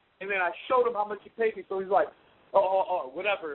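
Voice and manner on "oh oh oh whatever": put-on dismissive manner. Retelling how the other man answered after being shown the payment, imitating someone brushing him off. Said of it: "brushes me off".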